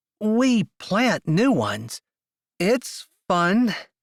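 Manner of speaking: very slow, high, forced through clenched teeth. [name] replies to Fink, speaking through clenched teeth. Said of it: "Saying it's fun through clenched teeth".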